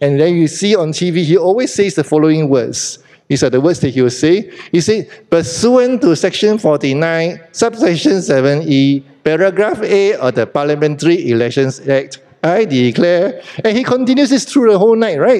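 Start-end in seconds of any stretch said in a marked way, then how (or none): 5.3-13.4 nasal, machine-like, robotic official-sounding voice. Imitating the official who reads election results on tv, robotic nasal voice. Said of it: "with a robotic voice and a nasal voice".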